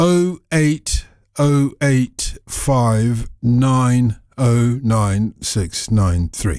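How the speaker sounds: very slow, spaced-out delivery. Radio presenter repeating the phone number for listeners, very slow. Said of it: "I'm going to say that slowly".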